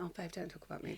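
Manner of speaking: shy soft voice.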